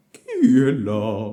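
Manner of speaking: very loud, rough, rasping, hoarse wolf voice. Reading a tale aloud, the wolf in bed asks who's there: hoarse voice. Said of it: "en entendant cette voix rauque".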